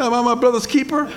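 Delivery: high, sarcastic, smart-aleck tone.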